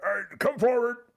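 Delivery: very high, loud, words through a mouthful. Narrator voicing King Morin mid-bite to the guardians, talking with mouth full. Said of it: "massive uh, ham hock in his mouth".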